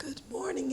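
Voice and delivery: struggling, failing, half-whispered voice. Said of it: "Excuse my voice".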